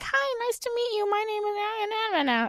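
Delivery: very high, squeaky, soft, slow stuffed-animal puppet voice. Recounting a girl who talked through a stuffed animal, in a stuffed-animal puppet voice. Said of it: "starts talking through the stuffed animal".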